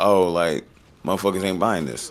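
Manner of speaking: usual speaking voice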